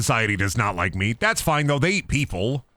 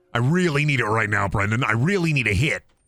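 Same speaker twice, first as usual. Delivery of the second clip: usual speaking voice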